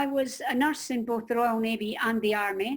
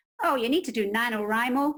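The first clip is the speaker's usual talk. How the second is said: bad, rubbish put-on American accent. Quoting an American woman's advice, rubbish American accent. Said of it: "excuse my rubbish American accent".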